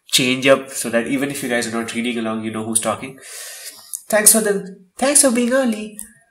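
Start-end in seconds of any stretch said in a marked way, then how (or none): 4.1-5.9 put-on girly character voice. Reading aloud, a put-on girly voice so listeners know who's talking. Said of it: "I'm gonna do that girly voice".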